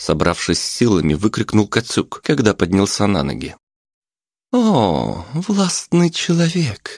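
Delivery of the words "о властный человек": very high, sing-song, swooping, sarcastic mocking voice. A woman's voice answers the man who shouted that he is mayor: sarcastic voice. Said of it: "продолжал все тот же саркастический голос".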